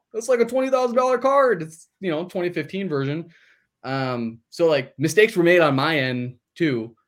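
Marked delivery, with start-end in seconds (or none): 0.2-3.4 high-pitched, smug, gloating crowing tone. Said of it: "that owner's probably laughing, going".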